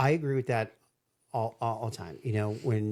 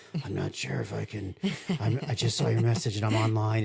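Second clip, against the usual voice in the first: mock half-dead, crawled-out-of-the-crypt voice. Retelling the head of sales answering a call from bed: imitating a half-dead voice. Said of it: "it literally sounded like he just, like, crawled out of the crypt".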